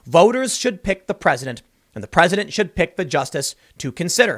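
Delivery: ordinary talk, nothing marked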